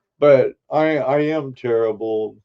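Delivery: plain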